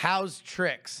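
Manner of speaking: play-acted, defiant, bold delivery. Retelling how a man leapt astride and declared to the speaker, bellowing voice. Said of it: "declares to me in a bellowing voice".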